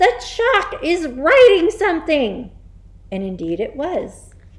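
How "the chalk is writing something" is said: high, loud shrieking scream. Nigel sees chalk writing on the blackboard by itself, screaming. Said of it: "screamed Nigel".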